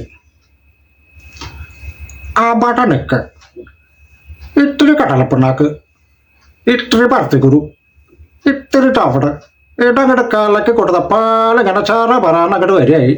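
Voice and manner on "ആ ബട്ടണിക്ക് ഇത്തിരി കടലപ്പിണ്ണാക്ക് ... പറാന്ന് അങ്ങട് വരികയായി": high-pitched old character actor voice impression. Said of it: "അടുത്തതായി ശങ്കരാടി".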